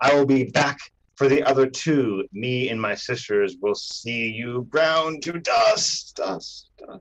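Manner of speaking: villain voice, ringing, echoing, reverberating. Narrator voicing a vanishing figure's parting words, in a reverberating voice. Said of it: "you hear her voice reverberate saying".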